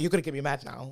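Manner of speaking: normal talking voice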